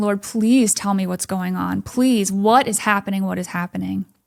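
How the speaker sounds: mock sobbing, tearful, desperate pleading tone. Retelling suddenly throwing up and praying, retelling sobbing pleas. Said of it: "I'm just sobbing and I'm going".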